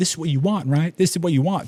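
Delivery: mock high, tearful, crying voice. Retelling mom's words as she breaks down crying: imitating mom crying. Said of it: "breaks down crying".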